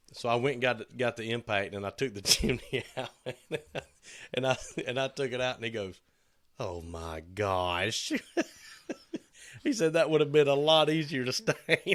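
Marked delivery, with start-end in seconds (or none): 6.6-8.2 put-on Yankee accent, much lower pitch and much slower. Retelling a man's reaction after the chimney was taken out: little Yankee accent. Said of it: "In his little Yankee accent".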